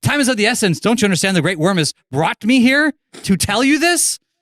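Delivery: very high-pitched, loud, excited yelling. Speaking in character, urging the others that time is short: loud excited shouting. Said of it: "I got real loud".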